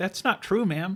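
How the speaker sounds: high, sweet, polite customer-service voice. Retelling a friend's reply to an angry customer, imitating a customer service voice. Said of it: "still got your customer service voice".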